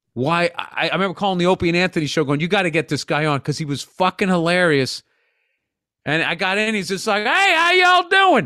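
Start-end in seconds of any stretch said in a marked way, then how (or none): 7.3-8.5 very high, slow, thick hardcore Southern drawl. Retelling how a hilarious man you got on the show greeted you, in a hardcore Southern accent. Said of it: "the most hardcore Southern accent I'd ever heard".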